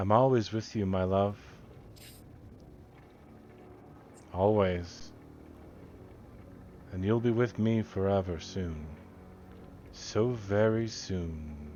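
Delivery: voice fading into the distance. Narrating to the players, a voice answers a whisper, fading off into the distance. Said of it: "And the voice kind of fades off".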